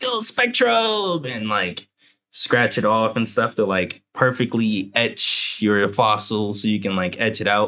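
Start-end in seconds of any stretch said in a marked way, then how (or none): 0.0-1.3 high, slow, drawn-out yell. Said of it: "blow into the cartridge and yell".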